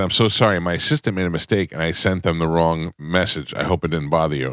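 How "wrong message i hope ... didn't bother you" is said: ordinary talk, nothing marked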